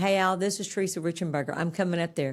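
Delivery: ordinary talk, nothing marked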